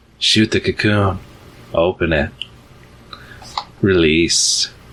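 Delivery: whispered spider creature voices. Voicing spiders who urge a player to release the prey: spiders whispering. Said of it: "They whisper again".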